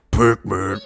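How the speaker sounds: loud, sinister put-on demonic voice. Showing how the game startup might say its name: put-on demonic voice. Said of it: "I bet it's going".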